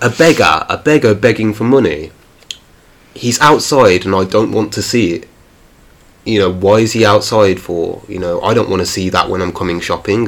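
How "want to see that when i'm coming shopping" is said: ordinary talk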